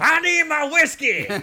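put-on shrill old man's yell, very high and loud. Retelling a scene where an old man is carried in, imitate his shout. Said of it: "Just starts shouting".

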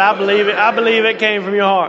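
ordinary delivery

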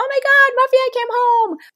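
excited, jubilant, very high-pitched squeal. Showing how an owner greets a crated dog on coming home, jubilant high-pitched voice. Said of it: "you have a high-pitched voice".

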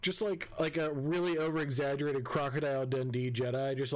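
ordinary delivery

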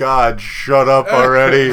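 acted, very loud, drawn-out, fed-up exasperated outburst. Imitating annoyed listeners of the show: imitating annoyed listeners. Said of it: "people are gonna be like".

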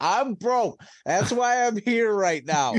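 angry voice. Retelling a reply to a woman asking for money while mad: retelling own angry reply. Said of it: "outside the office mad about something".

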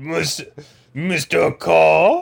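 put-on French accent. Starting an improvised phone bit after being asked about a french accent: french accent. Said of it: "how's your French accent?".

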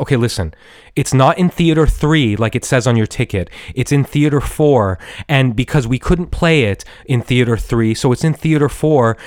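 ordinary talk

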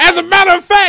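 high, loud, over-the-top enthusiastic voice.

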